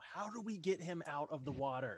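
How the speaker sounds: loud, screamed-out yell. Playing a character at the water's edge, screaming at other demons. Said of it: "I'm just gonna start screaming in Infernal".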